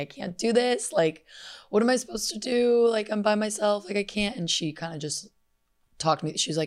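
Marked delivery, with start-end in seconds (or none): 0.0-4.4 put-on high tearful crying, barely holding together. Retelling a call to mom after missing a flight: imitating own past crying. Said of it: "I called my mom crying".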